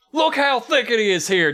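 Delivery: high-pitched yell, hollered out. Quoting the boys in the forest golf cart, yelling like Huckleberry. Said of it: "I'm going to yell it like Huckleberry".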